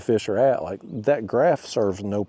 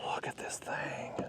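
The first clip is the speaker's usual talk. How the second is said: whisper, much quieter. Fisherman showing a big fish he caught, whispering. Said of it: "Why am I whispering?".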